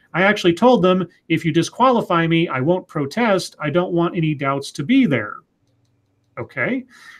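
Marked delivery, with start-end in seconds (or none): none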